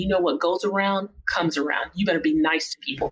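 normal talking voice

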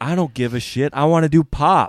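very loud, high, furious, pissed-off tone. Retelling what she told the old coach after O Fortuna plays: retelling an angry reply. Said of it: "she's fucking pissed".

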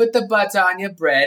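full-on put-on British accent. Imitating the woman in a recipe audio clip, British accent. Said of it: "it's like a British accent".

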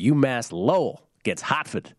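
terrible put-on New England accent, slow. Host giving a pick on umass lowell, terrible new england accent. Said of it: "terrible New England accent".

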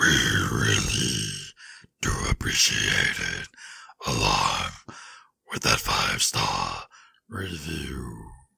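acted deep voice. Podcast co-host echoing a partner's sign-off, in a put-on voice. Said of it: "you had that you had that voice".

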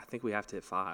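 whispered voice. Retelling how the caddie came close with advice: imitating someone whispering. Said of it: "comes in close and whispers".

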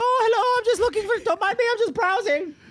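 very high-pitched comic sketch voice. Retelling how a sneaky character talks while hiding behind a mop: Monty Python voice. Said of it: "it was a Monty Python voice".

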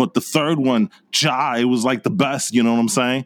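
put-on movie dude character voice. Giving final impressions of a movie to the others: Bill and Ted voice. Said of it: "giving us his impressions of Bill and Ted".

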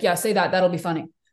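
mock super deadpan delivery. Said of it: "he'll say it super deadpan".

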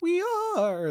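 voice cracking and breaking mid-line. Podcast host opening the show, repeating the show's name: voice cracking. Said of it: "My voice cracked when I did that".

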